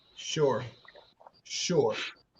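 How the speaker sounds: dry, sarcastic sure in a whisper. Responding to a claim that the breadwinner is the decision maker: sarcastic "sure". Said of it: "Do you say sure as, like, sarcastically?".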